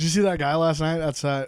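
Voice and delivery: normal talking voice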